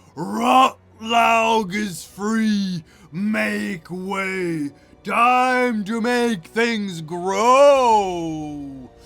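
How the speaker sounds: loud, croaky, chuckling creature voice. A narrator voices an unseen figure calling out from the dark, croaking and chuckling. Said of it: "a croaking, chuckling voice saying".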